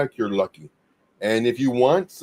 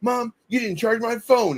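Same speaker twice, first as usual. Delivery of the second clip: put-on voice pitched way up, cross and annoyed; 9 semitones higher than usual. Retelling a video of a girl at the table: imitating a girl getting mad. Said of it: "she's getting mad at her mom".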